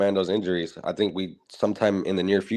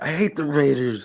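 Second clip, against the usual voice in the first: mock high, slow, tearful, blubbering little kid; 6 semitones higher than usual. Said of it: "crying hella bad".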